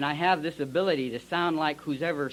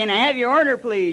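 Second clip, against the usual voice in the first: whiny, high-pitched little voice; 9 semitones higher, 9 dB louder than usual. Retelling a drive-thru visit, voicing the puppet taking orders: whiny little puppet voice. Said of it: "he got that whiny little voice".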